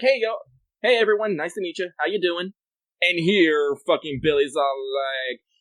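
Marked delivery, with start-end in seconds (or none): 0.0-2.5 laid-back, casual, breezy, easygoing, slightly higher pitch. Retelling how Billy talks in the America chapter: casual-like. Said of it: "Billy just talks, you know, casual-like".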